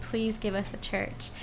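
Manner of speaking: put-on begging tone. Retelling villagers in Reatoka asking for a church, retelling begging. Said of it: "just begging".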